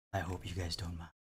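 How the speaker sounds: very soft, low ASMR voice.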